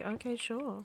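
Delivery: mock-indifferent flat tone. Speaker imitates the listener's way of saying it back, mock indifferent. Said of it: "with feeling and care in my voice, and you don't say it like that".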